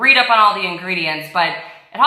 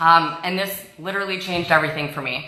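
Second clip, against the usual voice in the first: ordinary talk, nothing marked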